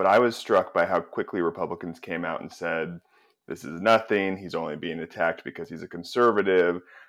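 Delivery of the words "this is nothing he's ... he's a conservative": ordinary delivery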